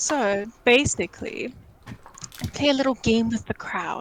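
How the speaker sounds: slow, toned-down, low-key, confiding delivery. Speaking to the group while laying out a plan, very quiet. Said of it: "I'm saying this very quietly".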